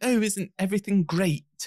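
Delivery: generic fake British accent, very high pitch. Speaker mocking how Americans do English accents, American-style fake English accent. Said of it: "I hate it when Americans do English accents".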